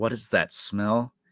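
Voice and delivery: ordinary talk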